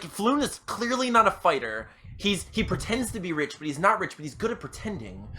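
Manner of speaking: ordinary talk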